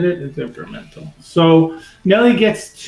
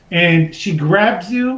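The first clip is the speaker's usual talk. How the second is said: ordinary talk, nothing marked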